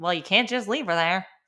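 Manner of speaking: put-on cranky, no-nonsense, grouchy old nurse voice. Retelling the delivery, speaker quotes the nurse in a grouchy old nurse voice. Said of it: "she kind of said it like just like that".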